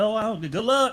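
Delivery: high, sarcastic, dismissive tone. Imitating the other speaker's earlier "good luck": imitating a sarcastic good luck. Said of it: "I can hear sarcasm when sarcasm is being laid".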